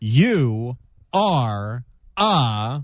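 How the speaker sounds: very slow, drawn-out, deliberate, low delivery. Retelling a congressman's reply to a challenge, speaking very slowly. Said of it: "said very slowly".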